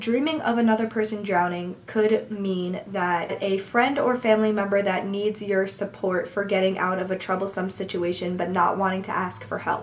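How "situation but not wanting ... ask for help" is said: ordinary talk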